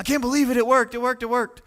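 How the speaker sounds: very high, fast, thrilled, acted-out excited outburst. Retelling an agent running up all excited: imitating someone excited. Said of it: "She was all excited".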